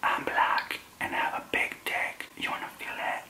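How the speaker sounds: very quiet, breathy whisper. Retelling what he whispered close to the ear at a club: imitating a whisper. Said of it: "he comes really close to my ear and he whispers".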